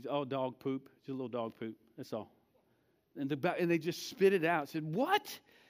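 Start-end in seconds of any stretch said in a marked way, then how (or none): 0.1-2.3 mock-casual, offhand, put-on nonchalant delivery. Retelling his dad's answer to the question, imitating a nonchalant tone. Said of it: "he said nonchalantly".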